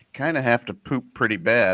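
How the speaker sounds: ordinary delivery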